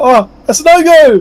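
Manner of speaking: high, slow startled realization.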